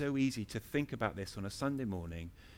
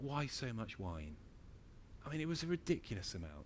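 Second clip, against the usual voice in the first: very quiet, soft, tender and gentle delivery; 10 dB quieter than usual. A speaker addresses listeners during a sermon, gently. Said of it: "I'm saying that gently".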